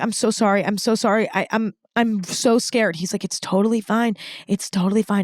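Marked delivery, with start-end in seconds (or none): 0.0-2.9 put-on sobbing and bawling, much slower. Retelling grabbing your ski instructor's arm in fright, imitating yourself sobbing. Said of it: "that I start bawling".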